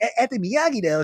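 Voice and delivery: high whiny bratty voice. Describing Daniel mingling with the senseis, the speaker voices him: whiny, bratty Daniel voice. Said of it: "kind of like a whiny".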